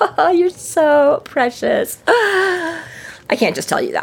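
acted laughing tease, very high, drawn out. Retelling how a woman laughed off a question in court, retelling a laughing reply. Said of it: "Maeve just laughs, like".

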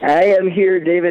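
breathless, out of breath. Guest [name] answers host David on the phone, panting, out of breath. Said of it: "I'm panting as I ran to the phone".

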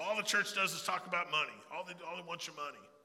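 jaded, cynical voice, rattled off quickly. Speaker switches into a cynical voice to voice one point of view; cynical voice. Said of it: "I'll use my cynical voice here".

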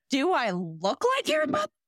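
mock no-nonsense sassy tone, swooping. Retelling how the star answers the man who fell on her: imitating a sassy retort. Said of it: "the star is so sassy and takes no shit".

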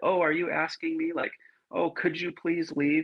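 arrogant, sarcastic, high, taunting mockery. Speaker retelling how demons respond to them, imitating mocking demons. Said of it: "the demons will laugh at me and they'll mock me".

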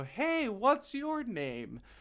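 put-on very high, swooping, talking-down voice. Acting out the Romans bending down to greet a boy, mock talking down to a kid. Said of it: "bend down like as a, you know, an adult would to a kid".

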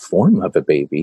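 put-on mutter under the breath. Retelling his wife's reaction during a prayer: imitating Draco muttering under breath. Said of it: "under breath".

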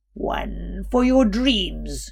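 slow, croaky woman's voice, words drawn out. Narrating a woman holding up the first of three stone cups, croaking. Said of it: "she croaked".

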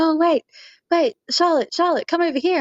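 high, calling-out yell, shouted loudly. Retelling how a race car driver called her across a crowd: imitating someone yelling. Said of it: "he yells out across the crowd".

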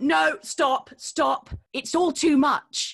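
loud, high, firm delivery.

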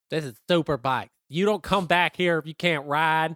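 put-on classic South Carolina accent. Narrating a story, voicing the bike shop refusing a refund, in a south carolina accent. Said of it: "It's just a classic South Carolina accent".

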